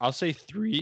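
cracked, breaking voice jumping high. While the group rates a character, speaker gives a score, voice cracking. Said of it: "my voice cracked".

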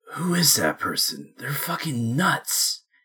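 harsh, very gruff, rough voice. Game narrator voices an unseen figure inside a building, very gruff voice. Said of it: "very gruff".

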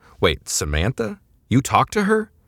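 derisive, scornful, high, swooping scoff. Hearing who the customer is, one man scoffs at the other. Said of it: "Manu scoffed".

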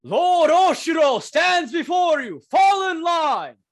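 very high, shouted, yelled soldier voice. Voicing a soldier in the courtyard who yells out: soldier yelling an order. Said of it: "he just yells out".

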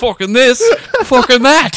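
very loud, shrill, high comic yell at full blast. Repeating the impression when teased: Billy Connolly impression. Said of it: "Billy Connolly, everybody".

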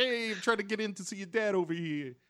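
very high-pitched, laid-back cool greaser voice. Retelling what Bobby said to Audrey on the podcast, in a Fonz voice. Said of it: "Because he's the Fonz".

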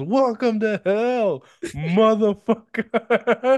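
very high, slow, drawn-out yell. Retelling a movie clip, imitating Keith David yelling. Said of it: "where he just yells".

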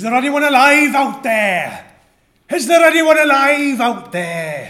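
put-on very loud, high, calling-out Irish accent. Redoing his bit as the irish guy at the end, in an irish accent. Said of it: "he was the Irish guy at the end".

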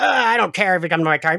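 put-on dismissive voice. Retelling an episode, acting out the father: imitating a MAGA dad. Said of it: "maga dad, who's like".

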